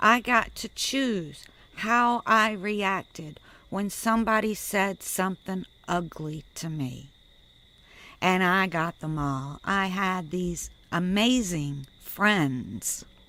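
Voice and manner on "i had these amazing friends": sarcastic, ironic, tongue-in-cheek praising tone. Describing how others treated them, speaking sarcastically. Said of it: "I'm saying that sarcastically".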